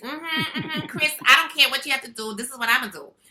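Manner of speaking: put-on high, loud kid-sister voice. Recalling a first voiceover role as the little sister, imitating the niece's way of talking. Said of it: "she talked just like this".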